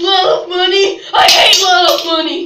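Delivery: furious, very loud, raging shout. A character ranting at 3 a.m. in a story, angry shouting.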